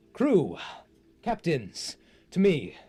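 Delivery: very loud, booming, slow, drawn-out bellow. Game master voicing a captain calling the crew from across the ship, booming Captain Astelar voice. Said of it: "Captain Astelar's voice just booming out".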